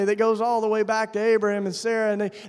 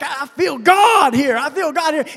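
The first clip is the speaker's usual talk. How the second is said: put-on fervent, excited outburst; 5 semitones higher, 8 dB louder than usual. Retelling grabbing a bishop after a service: imitating own excited outburst. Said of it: "up in a Pentecostal hoorah".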